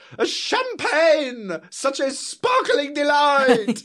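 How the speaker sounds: very high, drawn-out screamed cry. Retell how he reacted to a dance on the show, imitating Bruno screaming out. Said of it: "Bruno just screams out".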